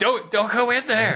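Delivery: very high, loud shouting yell. Joking about the guests following him, mock yelling at a horror movie. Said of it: "Yelling at the horror movie".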